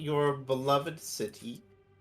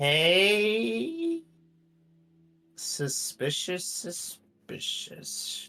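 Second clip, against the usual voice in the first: muttering under the breath, quietly to oneself; 3 semitones higher than usual. A player's character reacts to a villager, muttering under breath. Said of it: "muttered to herself under her breath".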